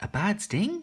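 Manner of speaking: pitch rises on the word sting. Teaching questioning intonation with a tricky example: rise on sting. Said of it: "you kind of put your voice up at the end".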